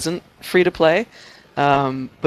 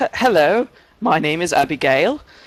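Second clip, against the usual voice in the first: put-on British accent, a best effort; 3 semitones higher than usual. Asked to put on their best British accent, speaker introduces themselves: put-on British accent. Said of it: "put on your best British accent".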